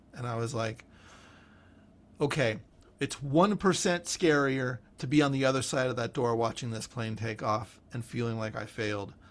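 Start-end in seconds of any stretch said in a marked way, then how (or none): none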